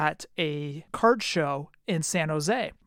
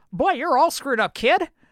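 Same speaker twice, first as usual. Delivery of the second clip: pitched up, with heavy twang; 9 semitones higher, 5 dB louder than usual. Retell what your idol said to you when you put down the card, in a twangy Will Clark voice. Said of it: "kind of like that twang".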